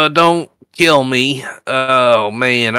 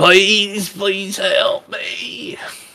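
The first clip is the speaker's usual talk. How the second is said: high, drawn-out, squealing pig-like voice; 7 semitones higher, 3 dB quieter than usual. Voicing a wounded prisoner begging for help: piggy-like squealing plea. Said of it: "He sounds almost piggy-like when he starts to squeal".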